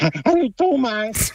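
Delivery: spot-on put-on cartoon bee character voice. A radio caller greets the host Thomas on request, Willi the bee impression. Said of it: "kein Unterschied zum Original".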